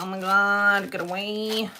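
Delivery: ordinary delivery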